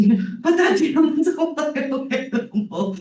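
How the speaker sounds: very high, slow, scared, frightened but composed. Retelling a video where a mom sees her toddler holding a bobcat: imitating a frightened mom. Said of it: "you can hear the fear in the mom's voice".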